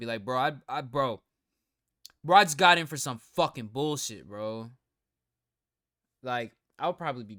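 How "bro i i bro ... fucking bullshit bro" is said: loud, angry, indignant, pissed-off, stammering delivery. Picturing getting locked up for nothing: acting pissed off. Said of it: "I'd be so pissed".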